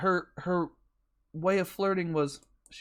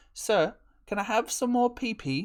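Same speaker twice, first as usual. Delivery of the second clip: put-on high, small British child voice; 4 semitones higher than usual. Mocking how someone must ask him before he gets a hint: little British orphan voice. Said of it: "like a little British orphan and go".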